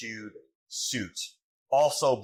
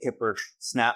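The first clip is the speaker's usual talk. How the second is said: ordinary talk, nothing marked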